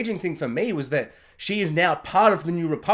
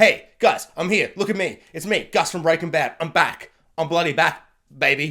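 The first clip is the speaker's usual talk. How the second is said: boastful, bragging villain voice. Retelling a villain's return scene as Moff Gideon: imitating Moff Gideon. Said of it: "Moff Gideon is just like".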